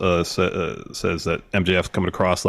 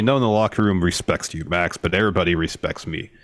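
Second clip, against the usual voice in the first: normal talking voice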